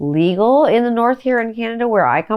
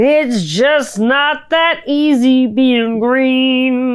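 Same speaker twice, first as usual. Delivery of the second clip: breath-held voice, "green" drawn out; 2 semitones higher than usual. Podcast host opening another edition, doing a Kermit the Frog impression, holding breath. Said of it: "That's my best Kermit the Frog impression while I'm still holding my breath".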